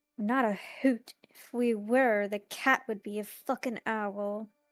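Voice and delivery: quiet, grumbled mutter under breath. Voicing a character walking past another: muttering under her breath. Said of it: "she's just gonna kind of mutter under her breath".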